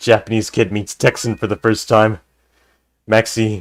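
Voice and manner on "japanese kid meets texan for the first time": ordinary delivery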